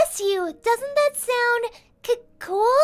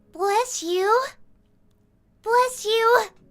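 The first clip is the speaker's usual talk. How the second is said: dorky, derpy-sounding nerdy character voice. Trying out a voice for a character, the speaker says a line in a nerdy voice. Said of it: "nerdy voice".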